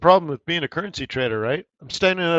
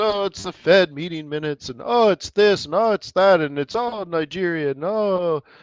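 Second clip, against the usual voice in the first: sarcastic, scornful, dismissive, eye-rolling delivery; 4 semitones higher than usual. Mocking the news explanations others give, in a mocking imitation of news excuses. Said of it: "you can hear my, my tone of voice".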